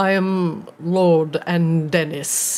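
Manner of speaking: deep echoing voice. Introducing himself to the group as Lord Andenis, in a deep echoing voice. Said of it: "he says with an deep, echoing voice".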